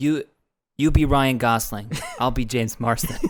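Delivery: put-on whisper. Imagining James Marsden leaning in to whisper: whispering as James Marsden. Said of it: "he whispers in your ear".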